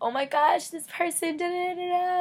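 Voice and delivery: put-on excited fast talk. Describing what she loves, the speaker acts out her excited fast talk. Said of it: "I get all excited and I'm talking all fast".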